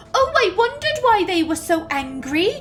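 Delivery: attempted, put-on Welsh accent, pitched high. Retelling their own reply in a past conversation, attempted welsh accent. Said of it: "that was my attempt at a Welsh accent".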